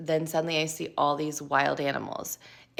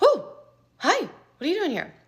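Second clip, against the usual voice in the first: very high, small, swooping startled voice; 13 semitones higher, 4 dB louder than usual. Retelling a lion poking its head into the tunnel: imitating being a little startled. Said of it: "I was a little startled".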